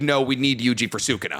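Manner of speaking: ordinary talk, nothing marked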